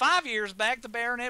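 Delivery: plain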